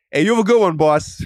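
put-on New York delivery-guy style accent. Retelling how they answer the UPS driver at the door: code-switching into New York accent. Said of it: "code switch".

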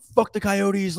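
mock, high-pitched screaming. Retelling what a fan in front was doing at the game: imitating someone screaming.

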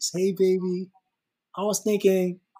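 sweet-talking, disarming, sweet tone. Giving an example of tone of voice, hey baby voice. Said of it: "is it the hey baby voice?".

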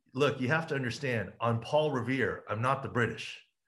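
plain

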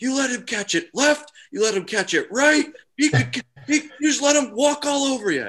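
very loud, very high-pitched, shrill coach bellow. Retelling how a teacher overheard the football coach in the weight room, retelling a coach's yelling. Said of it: "she just could hear him yelling at them".

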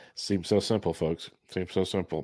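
very heavy, dripping sarcasm laid on thick. Reacting to the other speaker's ranking method: very sarcastic. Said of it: "very sarcastic there".

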